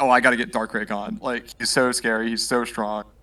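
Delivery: ordinary delivery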